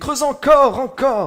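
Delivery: mock yelling, high-pitched shout. Reading a story aloud, voicing the wife's answer: shouting. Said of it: "Elle criait".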